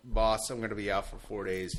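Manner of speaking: normal talking voice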